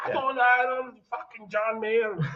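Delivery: mock thick German accent. Retelling what a longtime German customer says about pedals: imitating Wolfgang, thick German accent. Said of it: "he's got a thick German accent".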